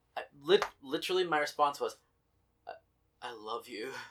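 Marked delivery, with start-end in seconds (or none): 2.7-4.0 hungry, longing, lustful craving tone. Retelling own reply to the cookie offer over the phone: retelling food-lustful voice. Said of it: "with this sort of, like, food lust in my voice".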